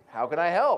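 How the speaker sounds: upbeat, positive attitude. Showing the audience how to say the phrase with a positive attitude. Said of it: "say it like you actually have a positive attitude".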